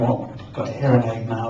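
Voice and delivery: normal talking voice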